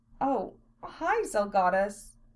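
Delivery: listless, slow, drawn out, uninterested. She greets the man who sat down beside her, listless. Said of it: "she said listlessly".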